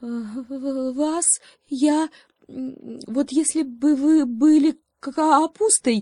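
cowering, high, slow, faltering, stretched "Вас". Reading a fable aloud, the hare answers the growling lion, cowering and hesitant. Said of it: "заяц съежился".

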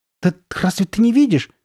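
quavering, unsteady voice. Narrator reads Sabrina's line in a story, trembling voice. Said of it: "проговорила Сабрина дрожащим голосом".

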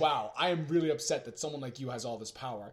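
plain

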